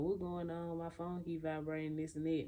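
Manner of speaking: ordinary delivery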